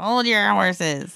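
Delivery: put-on raspy, rasping old lady voice. Describing a waitress with a unique voice, Florence Stanley raspy old lady voice. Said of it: "this raspy old lady kind of voice".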